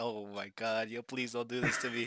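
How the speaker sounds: mock pleading while choking back a laugh. Retelling begging a classmate in class to stop: imitating holding back laughter. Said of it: "I'm trying to hold laughter".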